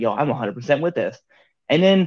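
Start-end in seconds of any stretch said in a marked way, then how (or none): none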